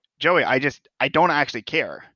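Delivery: ordinary delivery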